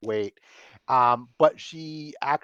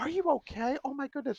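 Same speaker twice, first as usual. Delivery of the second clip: put-on very high, fussing, fretting, worried old-lady voice; 13 semitones higher, 5 dB quieter than usual. Voicing an old lady rushing to a fallen player: worried old grandmother voice. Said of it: "worrying like a, like, like an old grandmother".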